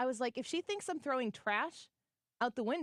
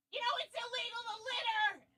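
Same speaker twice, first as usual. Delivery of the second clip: put-on, very high, shrill shouting; 11 semitones higher than usual. Retelling what an angry driver shouted through her open window: imitating someone yelling. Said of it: "after she yelled at me".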